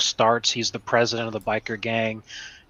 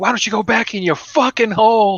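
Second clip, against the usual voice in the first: shrill, very loud, high-pitched screaming fit; 11 semitones higher, 8 dB louder than usual. Retelling a Sopranos scene where Tony screams at a gambler: imitating Tony Soprano screaming. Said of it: "He just starts screaming at him".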